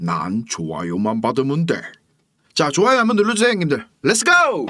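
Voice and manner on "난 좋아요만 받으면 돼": very low, slow, drawling villain boss voice. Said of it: "너구리 성대모사 한번 하겠습니다".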